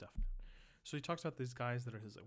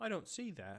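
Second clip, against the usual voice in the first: British accent, pitched up; 5 semitones higher than usual. Voicing a quoted objection while reading a text aloud; british accent. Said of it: "I think that's in a British accent".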